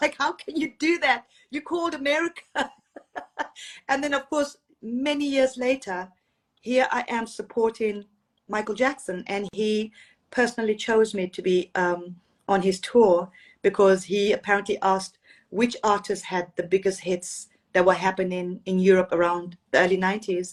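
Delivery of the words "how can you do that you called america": high, annoyed scolding dad voice. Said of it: "my dad was so annoyed".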